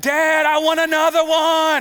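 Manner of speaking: put-on high, loud yelling in a kid's voice. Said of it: "one of the kid is yelling".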